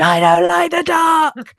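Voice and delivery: very loud, high, ragged, drawn-out ghost scream. Retelling how the ghost got into the players' faces: retelling a ghost's scream. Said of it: "just screamed".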